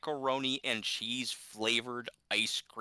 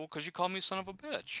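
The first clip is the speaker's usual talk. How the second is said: put-on high, petulant, hurt, childish sulking voice; 7 semitones higher, 4 dB quieter than usual. Retell a man's answer when he was asked why, imitating him sounding childish. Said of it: "I love the childish sound of it".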